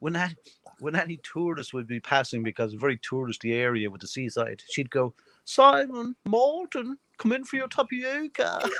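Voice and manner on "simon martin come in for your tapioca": put-on laid-on English accent, very high pitched and slow. Retelling how she called the kids when tourists passed: imitating a put-on english accent. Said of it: "she put on an English accent".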